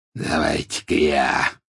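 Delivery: low, deep growl, growled-out words. Narrator voicing the werewolf offering to step in, growling. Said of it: "прорычал Сивый".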